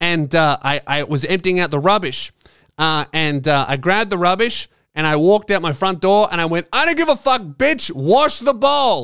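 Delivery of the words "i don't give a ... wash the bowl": acted-out scream, much higher pitch. Telling a story, acting out what they yelled while taking out the rubbish, retelling own scream. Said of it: "it just sounded like I was screaming".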